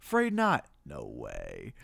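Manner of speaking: very low, sarcastic, sassy, drawn-out taunting. Recounting a favorite movie moment, doing a mock-sassy Ghostface taunt. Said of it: "almost like kind of sassy".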